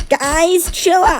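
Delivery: very high, squeaky cartoonish squeal. Imitating a man nobody could keep a straight face around, squeaky cartoon voice. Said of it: "squeaky, like, cartoon voice".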